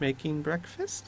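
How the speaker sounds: bashful, soft, sheepish, little voice. A storyteller voices a character caught making a mess, sheepish. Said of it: "she looks sheepish and goes".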